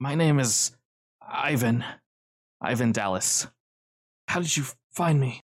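every word half-whispered, no voice at all. A narrator voices a man giving his name and asking how he was found, half-whispered. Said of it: "everything he says is just whispered".

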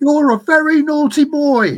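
very high, loud, terrible squeaky comedy voice. Talking about a Monty Python movie and quoting a line from it; Monty Python impression. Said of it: "that was the worst impersonation ever of it. I need a squeakier voice".

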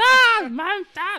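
shrill, very loud, high, harsh grating voice. Recalling a film's ending and acting out Todd: grating Todd imitation. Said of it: "je suis un peu désagréable pour vos oreilles".

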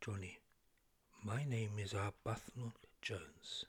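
very low, soft, hushed half-whisper. Arbuthnot Jones speaks into Johnny's ear, half-whispering. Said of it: "I am whispering into your ear".

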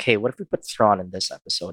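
ordinary talk, nothing marked

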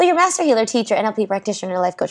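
rapid-fire, rattled off fast yet clear. Retelling how she rattled off the speaker's titles: imitating someone talking fast. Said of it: "But she said it so fast".

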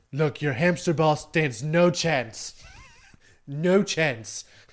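swinging pitch, drawn out long. Threatening a hamster ball, then admitting it's terrible: terrible Donald Trump impression. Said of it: "That's a terrible impression".

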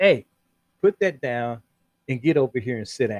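play-acted firm, stern fatherly voice. Retelling what a father said to his little boy in a shop; retelling a firm command. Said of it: "he said in a firm voice".

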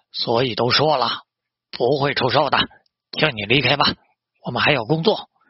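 ordinary delivery

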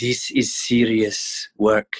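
quiet, hushed, slow, deliberate, drawn out. Retelling what Werner Herzog quietly said on set: imitating Werner Herzog speaking quietly. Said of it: "And he was very quiet".

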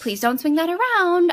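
mock parent voice, nagging.

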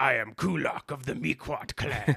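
creaky, odd demon growl, croaked out.

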